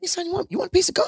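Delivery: squeaky, very high-pitched, hurried, rattled-off voice. Speaker retells a car ride as a kid, imitating Uncle Mike's high-pitched voice. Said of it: "he was talking this high pitched voice".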